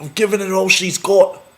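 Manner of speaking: very high, loud put-on Scottish accent. Introducing a friend who went to Scotland, the speaker tries a put-on Scottish accent. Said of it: "That's my Scottish accent".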